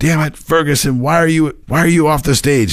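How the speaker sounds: very high-pitched, loud hollering. Telling a story, acting out a man yelling at a trumpeter, retelling a yell. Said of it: "Now he's yelling".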